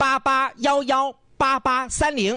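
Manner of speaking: high, slow, drawn-out delivery in chunked groups.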